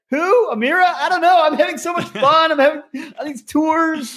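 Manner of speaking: high, giddy, fake-cheerful mock voice.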